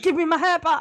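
high, loud, whiny, indignant dog voice.

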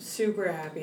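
ordinary delivery

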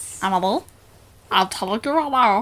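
low, soft, cartoon alien creature voice. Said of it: "That's my Stitch voice".

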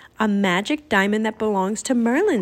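ordinary delivery

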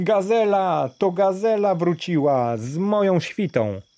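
delighted joyful cry. Daraj looks out the window at the noise outside; exclaiming joyfully. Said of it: "wykrzyknął radośnie".

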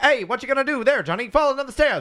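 high, hammy, over-the-top vintage TV and movie delivery. Imitating how people talked in tv and movies back then: over-the-top old tv movie talk. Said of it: "that's how people talk on, on T V and movies from the time".

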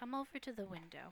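soft, wispy, darker feminine voice.

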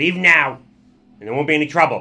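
very loud, high, tiny goblin voice. A goblin speaks from inside the mech: tiny goblin voice. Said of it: "you hear a tiny goblin voice from inside".

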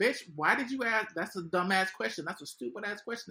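mock fed-up, mad, ranting, angry yelling. Recalling watching her get asked questions, retelling yelling at the phone. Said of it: "I'm literally like yelling at my phone".

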